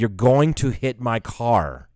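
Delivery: calm, slow, deliberate, reasonable tone.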